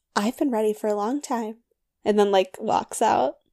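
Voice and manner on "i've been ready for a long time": muttered under breath, quieter. Retelling a remark from an episode: imitating someone muttering under her breath. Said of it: "She says under her breath".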